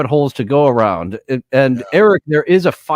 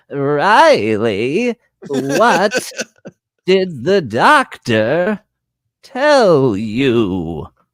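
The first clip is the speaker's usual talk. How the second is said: put-on elderly woman's voice with "you" drawn out. Retelling what a woman said to someone, old lady voice. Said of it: "she had such an old lady voice".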